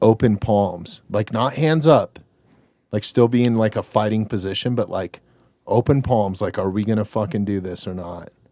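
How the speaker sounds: ordinary talk, nothing marked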